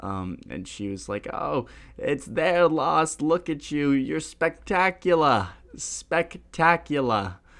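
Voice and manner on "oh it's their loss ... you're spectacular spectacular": put-on beautiful New York accent, pitched up. Retelling what a woman said to the speaker, in her New York accent. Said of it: "In her beautiful New York accent".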